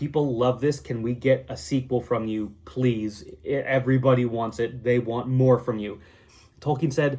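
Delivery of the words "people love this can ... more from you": ordinary talk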